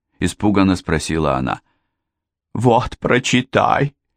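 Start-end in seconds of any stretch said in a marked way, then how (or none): 2.5-3.9 stagey, tragic, grand theatrical delivery. Ermintrude hands Mary the letter, speaking theatrically. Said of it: "театрально произнесла Эрминтруда".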